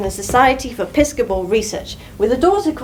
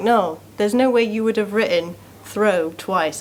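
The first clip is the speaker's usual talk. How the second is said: normal talking voice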